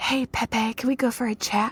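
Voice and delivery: soft, secretive whispered aside. Retelling how a contestant pulled someone aside: imitating someone whispering. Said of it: "She whisper-".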